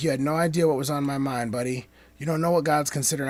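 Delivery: normal talking voice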